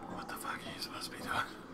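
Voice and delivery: soft, fast, hurried whisper.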